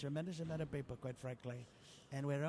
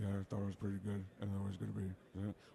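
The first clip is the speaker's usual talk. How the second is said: mumbly, lower-pitched put-on basketball star voice; 7 semitones lower than usual. Imitating Shaq saying something in a bit: Shaq impression. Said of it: "So Shaq will say something".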